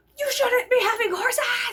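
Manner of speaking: play-acted, very high, shrill, loud, furious screaming. Retelling what masked protesters screamed: imitating protesters screaming. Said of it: "screaming, like, very loud, but it was muffled".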